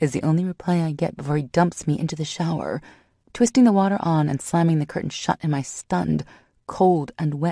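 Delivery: plain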